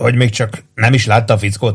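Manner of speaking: ordinary delivery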